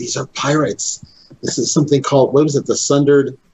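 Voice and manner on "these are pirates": quiet whispering voice. In a tabletop game, a player's character speaks to the group: whisper. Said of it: "I whisper to them".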